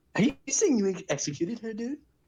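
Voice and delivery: fake English accent, very high and swooping. Saying the line on request, put-on English accent. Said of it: "where'd the English guy come in at the end?".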